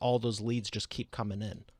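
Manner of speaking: ordinary talk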